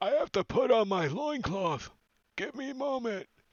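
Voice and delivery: squeaky, very high-pitched put-on ogre character voice. Voicing an ogre in the back who is picking stuff up: ogre voice. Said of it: "The one in the back, you can hear".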